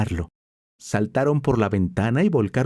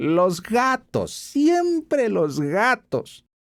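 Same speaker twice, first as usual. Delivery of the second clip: high, slightly nasal voice; 8 semitones higher than usual. Reading a story aloud, the marquise complaining about cats: high, slightly nasal voice. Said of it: "con una voz aguda y un poco nasal".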